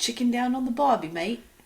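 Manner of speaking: put-on Australian accent. After being told he sounds a little british: put-on australian accent. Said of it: "say something in an Australian accent".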